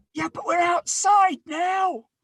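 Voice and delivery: very high, shrill, loud screaming. Voicing a character shouting at arrivals standing nearby: character screaming. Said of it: "you don't have to scream at us".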